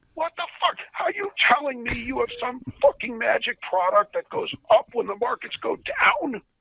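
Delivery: furious, shrill yelling, voice way up high. Retelling what the boss said in his face: imitating the boss yelling. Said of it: "Why are you yelling at me?".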